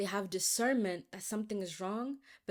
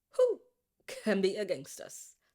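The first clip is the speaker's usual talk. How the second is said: swooping, theatrical, preachy delivery with big pitch swoops; 3 dB louder than usual. Finishing a line about God being on our team: Angela Bassett voice. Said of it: "in my Angela Bassett voice".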